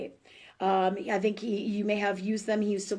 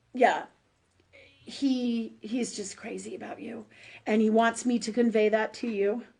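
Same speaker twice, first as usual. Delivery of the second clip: emotional voice catching, choked up. Relaying a message he wants conveyed to the listener, the speaker is choked up, emotional. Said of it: "I'm getting all emotional".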